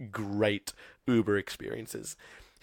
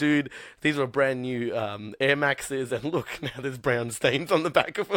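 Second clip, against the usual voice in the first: ordinary talk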